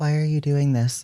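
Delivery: exaggerated theatrical stage whisper. Voicing Adelaide's reaction, stage whisper. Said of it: "She says in like a in like a stage whisper".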